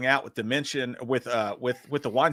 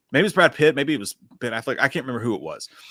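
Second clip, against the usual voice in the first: normal talking voice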